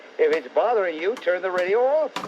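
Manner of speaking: ordinary delivery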